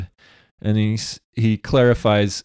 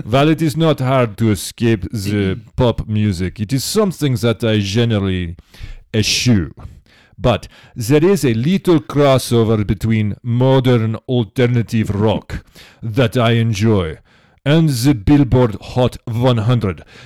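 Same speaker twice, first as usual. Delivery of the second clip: put-on Russian accent; 4 dB louder than usual. Reading Dimitri's written message aloud, as Dimitri in a Russian accent. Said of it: "I should read your stuff with a Russian accent".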